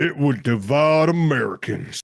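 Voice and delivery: put-on Southern American accent. Reading out a man's remark from 2000, the speaker repeats it imitating a Southern accent. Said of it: "Is that a better Southern accent".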